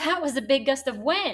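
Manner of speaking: thrilled, eager, excited and lively. Demonstrating a sentence that ends with an exclamation mark: excited. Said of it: "I would probably say this with more excitement".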